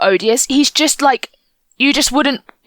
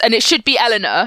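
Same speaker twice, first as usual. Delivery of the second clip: usual speaking voice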